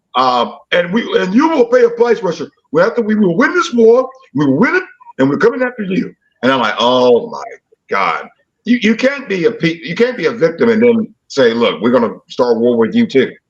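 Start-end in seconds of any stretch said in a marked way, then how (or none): 0.7-6.1 very high, menacing, threatening voice. Quoting what a leader said on Russia Today media, imitating how he sounds. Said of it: "And that's how he sounds".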